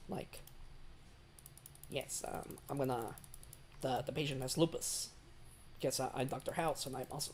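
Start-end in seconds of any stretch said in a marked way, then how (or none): 1.9-7.3 breathy, breathed-out voice, almost a whisper. Noticing a sudden resemblance and showing how he spoke, Doctor House voice. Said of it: "This is how Doctor House spoke".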